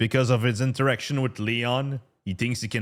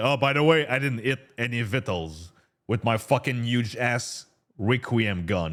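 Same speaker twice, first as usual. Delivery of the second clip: normal talking voice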